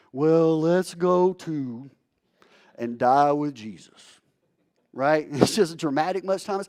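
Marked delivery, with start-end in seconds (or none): 0.1-4.0 slow, dragged-out, gloomy, droopy voice. Reading Thomas's line to his fellow disciples in an Eeyore voice. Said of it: "I hear this kind of in an Eeyore voice".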